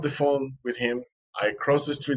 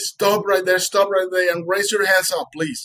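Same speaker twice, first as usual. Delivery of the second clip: high shouted delivery, drawn-out; 7 semitones higher, 4 dB louder than usual. Speaker retells a man on a bridge screaming at them; retelling a screamed command. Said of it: "the guy screamed at me".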